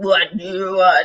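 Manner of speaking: demonic voice that sounds like a man. Retelling a narcissist's mask slipping, imitating a voice that sounds like a man. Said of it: "That voice will change. You think you're talking to a dude".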